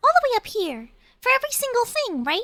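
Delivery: mock squeaky mouse voice. Describing a teammate's role-play character, a small mouse: Bitsy the mouse's high voice. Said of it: "This is how the mouse speaks, just up here".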